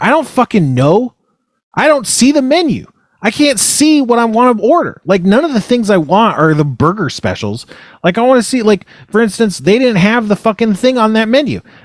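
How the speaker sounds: acted-out frustrated angry yelling, pitched very high. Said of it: "I was yelling at them".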